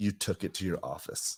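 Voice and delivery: soft, hushed, close whisper. Retelling how she answered in his ear: imitating her whisper. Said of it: "she kinda whispers in my ear".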